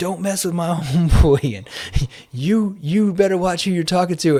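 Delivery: agitated, angry put-on man's screaming voice. Retelling a stranger at the door yelling at the speaker, imitating his screaming. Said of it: "and he's screaming".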